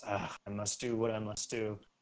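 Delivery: very quiet, faint, dejected, resigned sigh. Voicing a character about to use a magic item: faint dejected sigh. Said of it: "gives a faint, dejected sigh and goes".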